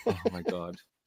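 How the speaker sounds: high, soft, exasperated groan. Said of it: "I'm like".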